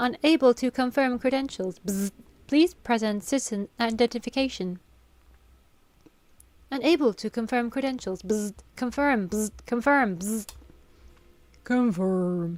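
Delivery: mechanical robot voice with buzzes and beeps. Voicing a malfunctioning robot that asks for identification: beep boop robot voice. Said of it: "gonna give it beep boop robot noises".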